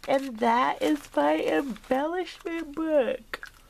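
words stretched by a yawn. Showing craft embellishments to viewers, speaking while yawning. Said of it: "Sorry, guys. I'm yawning".

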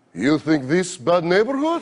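put-on Russian accent. Answering two thugs while walking home at night, the speaker uses a fake Russian accent. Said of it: "I fake a Russian accent".

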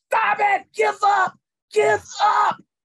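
very high, loud, stretched-out scream. Retelling a girl in a wall sit contest yelling at another girl: imitating someone screaming. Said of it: "And she's screaming".

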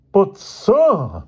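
shrill, high, loud pleading with "sir" drawn out. Accused by the man he calls sir, he answers: pleading. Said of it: "pleaded George".

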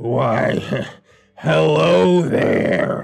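deep, low, croaky voice. Retelling someone suddenly speaking up beside them: deep, croaky voice. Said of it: "a deep, croaky voice beside me".

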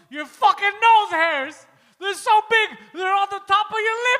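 all-out, shrill, very loud screaming. Retelling a podcast moment when Poseidon breaks: retelling Poseidon screaming. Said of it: "And he's just screaming".

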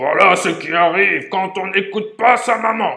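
very loud, booming storybook big-bear shout, rising. The big bear calls after a fleeing girl, shouting in his big voice. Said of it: "lui cria de sa grande voix".

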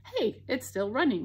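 plain

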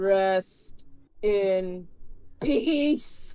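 very low, creepy, slow voice. Doing a wrestler voice after describing it: Undertaker voice. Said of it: "a very low, creepy voice that you talk slow in".

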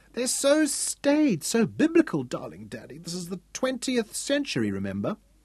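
high, swooping, theatrical pouting whine, laid on thick. Narrator reads a girl's reply to her father, pouting dramatically. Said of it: "pouting dramatically".

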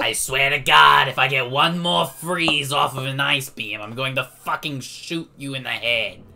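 very loud, clumsy, botched character voice, yelled. Speaker doing a Roz voice mid-game, which a listener then critiques. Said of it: "That was not a good Roz".

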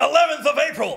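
very high, loud, belted character voice. Saying the show date for a clip: J K Simmons voice. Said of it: "I was gonna channel J K Simmons".

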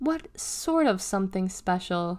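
plain reading voice

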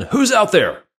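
put-on play-acted very high-pitched little-kid yell. Telling a story, repeating what a little kid yelled out again, retelling a kid's yell. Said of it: "yelled out again".

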